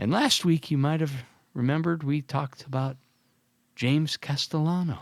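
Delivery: mock sad tone. Mentioning someone talked about last week, in a mock sad tone. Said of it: "Why do you sound sad?".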